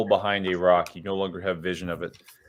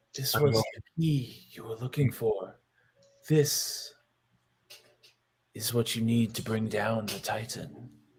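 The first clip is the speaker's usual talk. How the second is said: soft, hushed half-whisper close to the ear; 3 semitones higher, 6 dB quieter than usual. A narrator voices a voice half-whispering to the listener about the staff, half-whispering. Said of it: "starts to whisper to you about the staff".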